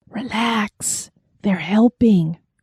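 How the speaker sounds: whispering. Reading a story, an inner voice reassures the heroine: whispering. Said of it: "whispered that inner voice".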